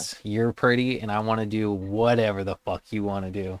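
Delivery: normal talking voice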